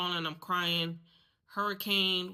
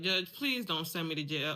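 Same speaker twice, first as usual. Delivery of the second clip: mock crying, faster. Retelling standing before a judge after an arrest, retelling crying to a judge. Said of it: "I'm crying uh".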